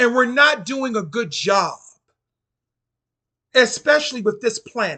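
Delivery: impassioned, voice lifted. Speaking to an audience, getting passionate: raised voice. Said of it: "I know I'm raising my voice".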